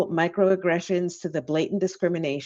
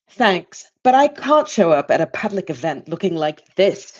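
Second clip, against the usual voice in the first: terrible, awkward put-on English accent; 8 semitones higher than usual. Retelling what a woman said about her hair, in a terrible English accent. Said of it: "Terrible English accent".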